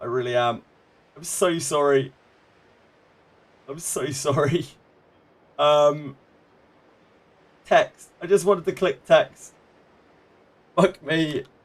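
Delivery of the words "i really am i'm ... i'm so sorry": voice close to tears, on the verge of crying. Apologizing after finding something still open in a tab, close to tears. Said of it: "I'm gonna cry in a second".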